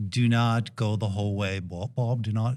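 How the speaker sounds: bad put-on British accent. Retelling what his coach told him, in a bad british accent. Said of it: "in his British accent".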